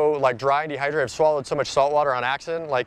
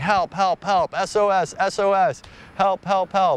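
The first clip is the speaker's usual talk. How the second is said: mock very slow, stretched, drawn-out, high cries; 5 semitones higher than usual. Telling of swimming after a boat, retelling yelling for help. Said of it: "But I'm yelling".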